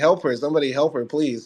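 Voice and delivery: mock screaming. Retelling a pharmacy story, the speaker quotes a woman there, retelling a scream. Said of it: "the woman there starts screaming like".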